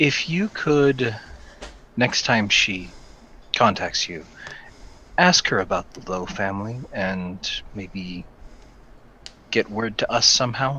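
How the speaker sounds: hushed, quiet murmur under the breath. Asking another character to pass on a message: said quietly under breath. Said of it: "kind of under my breath".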